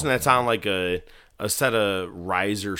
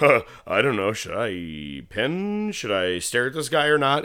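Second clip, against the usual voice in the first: mock dithering, clueless, puzzled referee voice; 3 semitones higher than usual. Retelling how the ref reacted to a close call: imitating the clueless ref. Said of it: "He just stood there and goes".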